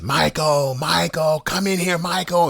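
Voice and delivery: very high-pitched, acted-out hollering. Retelling a woman calling out from another room: imitating someone yelling a name. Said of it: "just yelling".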